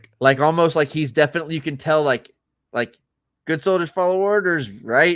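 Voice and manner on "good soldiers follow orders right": mock sarcastic, flippant, doubting, pitched-up throwaway. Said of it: "he's questioning it a little bit".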